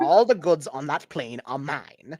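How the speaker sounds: basic put-on British villain accent. Voicing a shifty warlord questioning intruders: basic british evil guy accent. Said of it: "basic British, like, evil guy".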